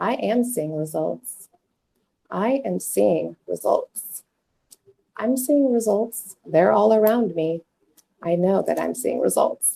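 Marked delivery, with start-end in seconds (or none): 0.0-4.2 slow, deliberate, unhurried, mindful delivery. Showing listeners how to repeat an affirmation, saying it slowly. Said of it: "say it slow".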